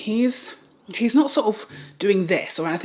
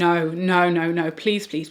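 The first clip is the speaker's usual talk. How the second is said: acted-out tearful pleading, slower. Retelling the moment she dissolved, imitating crying while pleading. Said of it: "bursting into tears and saying".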